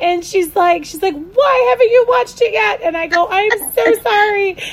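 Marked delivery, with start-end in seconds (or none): 0.8-2.8 mock yelling, much higher. Acting out the speaker's sister questioning them, retelling a yell. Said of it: "My sister actually yelled at me".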